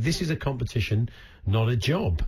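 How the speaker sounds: plain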